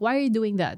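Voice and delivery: plain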